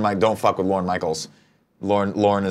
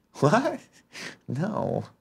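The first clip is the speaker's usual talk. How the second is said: put-on airy, breathy, half-whispered voice; 11 semitones higher, 7 dB quieter than usual. Doing an impression of a friend present: Andy impression. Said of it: "I'll do my best, Andy".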